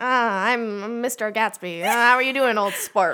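talking out of the corner of the mouth. Imitating an actor who talks out of the corner of his mouth: Leonardo DiCaprio as Gatsby. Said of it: "It's always like".

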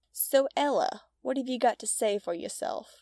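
mocking, goading, taunting tone. The lead guy of three confronts a lone girl, taunting. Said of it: "The lead guy taunted".

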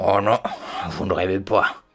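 rough, gravelly pig voice with mouth full. A pig answers a man asking if he is dreaming; gravelly voice, mouth full of cabbage. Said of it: "de sa voix graveleuse et encombrée de feuilles de chou".

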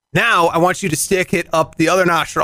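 ordinary talk

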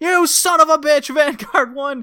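put-on high, loud holler. Retelling how he yells at the drone flying away: imitating someone yelling. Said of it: "He yells".

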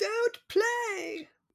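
play-acted very high, drawn-out little boy's shriek. Retelling a son's scream on a submitted videotape: imitating a son screaming. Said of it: "son screaming".

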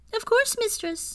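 very high, chirpy elf voice. Narrator reads the elf Tulip answering her mistress, in a high chirpy voice. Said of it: "Tulip said in a high, chirpy voice".

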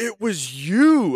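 very high, loud, shocked gasped exclamation. Retelling how a stranger gasped on recognizing someone: imitating a gasping exclamation. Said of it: "he gasps, and he's like".

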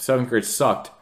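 usual speaking voice

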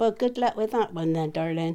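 plain

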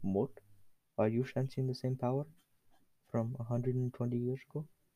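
put-on whisper. Retelling a scene as King Julien speaking to Mort, whispering. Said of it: "he whispers to Mort".

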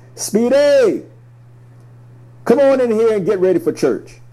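booming, very high-pitched, loud calling voice. Recalling a grandfather calling from the front porch during basketball, imitating grandfather's booming voice. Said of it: "a booming voice would come from our front porch".

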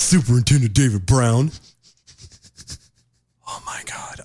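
angry, restrained. Reacting to a quoted police superintendent: angry, holding back swearing. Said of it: "I'm so pissed right now".

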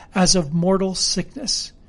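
plain reading voice

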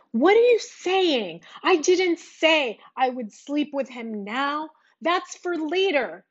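high, heated, angry yelling. Recounting an argument, quoting her as she started yelling again, retelling her yelling. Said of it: "she started yelling again".

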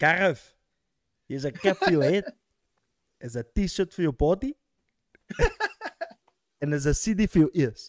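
animated, swooping, sing-song put-on voice. Offer Gareth gifts one after another, in a very good Greg impersonation. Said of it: "That's a very good Greg impersonation".

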